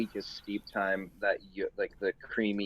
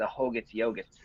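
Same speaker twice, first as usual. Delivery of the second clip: put-on speaking with a Boston accent; 2 semitones higher than usual. Joking about a name sounding like a yogurt brand: boston accent. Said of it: "You just said in a Boston accent".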